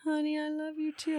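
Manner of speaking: sweetly spoken. Ending the show, answering a co-host's i love you, in a sweet voice. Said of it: "does your voice always change when you say that? It's so sweet".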